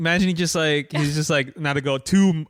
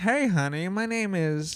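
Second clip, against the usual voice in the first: put-on fifties-style voice, quieter; 3 semitones higher, 5 dB quieter than usual. Discussing a TV character, the speaker performs her greeting; Agnes 1950s vernacular voice. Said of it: "I'm trying to do it in her fifties, like vernacular".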